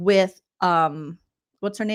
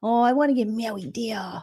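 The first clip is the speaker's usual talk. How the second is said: dumb, mocking, put-on baby voice. Mocking how a woman talked last night about marriage, in a dumb baby voice. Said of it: "she always has that dumb baby voice".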